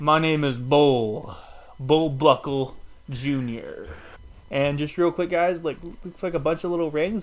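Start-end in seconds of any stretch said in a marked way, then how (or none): 0.0-3.9 put-on slow, drawn-out, drawling southern twang accent. Review channel host switches from last video's Elmo voice to a new character, southern twang. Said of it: "more southern twang".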